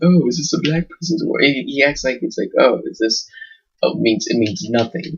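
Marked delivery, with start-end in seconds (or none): 0.0-1.4 put-on smug, stupidest-possible dim-witted delivery. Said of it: "He says it in such stupidest way possible".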